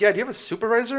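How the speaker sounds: very high, polite customer-service tone.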